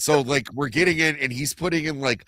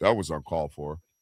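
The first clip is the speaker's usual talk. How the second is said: mock very low, level, nonchalant deadpan monotone; 10 semitones lower, 4 dB quieter than usual. Imitating Vagabond reacting calmly to a shooting: imitating Vagabond's nonchalant monotone. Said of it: "he's very, like, nonchalant".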